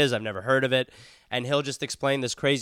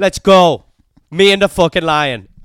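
imitated Irish accent, higher and louder; 6 semitones higher, 15 dB louder than usual. Acting out an irish brawler fighting a lion: put-on irish accent. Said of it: "you're fucking dominating that accent".

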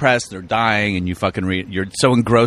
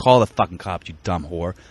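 put-on frantic, panicked ranting; 3 semitones lower than usual. Retelling confronting a boss over a late check: retelling freaking out. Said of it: "John Malkovich style, freaking out".

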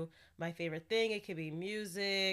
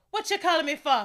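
loud, high-pitched put-on Jamaican accent; 8 semitones higher, 9 dB louder than usual. Imitating a boy in a video speaking Patois: attempted Jamaican Patois accent. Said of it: "In Patois, it's like".

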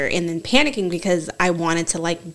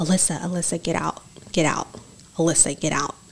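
put-on whisper, quieter; 4 dB quieter than usual. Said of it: "someone saying".

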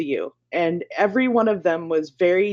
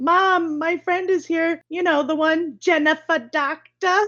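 very high child's put-on New York accent; 9 semitones higher than usual. Speaker acts out a co-host as a little girl calling to her mom; little girl new york accent. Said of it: "Now we've lost our New York audience".

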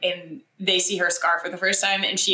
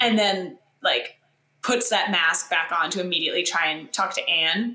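ordinary talk

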